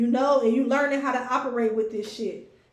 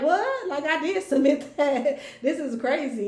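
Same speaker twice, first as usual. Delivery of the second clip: mocking words half-swallowed by laughter, drawn out; 2 semitones higher than usual. Acting out a reply to someone nitpicking, acting out laughing while talking. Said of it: "I'm laughing out loud in your face".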